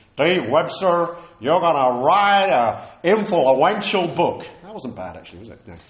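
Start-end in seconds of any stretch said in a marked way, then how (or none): 0.2-4.5 put-on loud, slow Southern American accent. Retelling a student calling out to the whole congregation, in a Southern American accent. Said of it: "in his Southern American accent".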